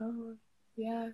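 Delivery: near-silent, barely audible half-whisper. Showing how they talk to their parents: imitating own very quiet talking. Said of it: "I talk very quiet sometimes".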